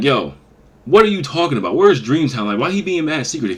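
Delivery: mock fed-up irritation. Retelling questioning a man late at night, retelling irritated questions. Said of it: "I'm a little irritated".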